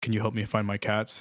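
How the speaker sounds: put-on deep male voice. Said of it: "a fucking man with a deep voice just go".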